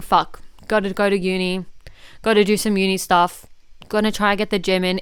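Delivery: play-acted begrudging, dragged-down, miserable, reluctant voice. Voicing the thought of waking up for uni and gym, acting miserable and reluctant. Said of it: "Even the tone of my voice on that, that sounds fucking miserable".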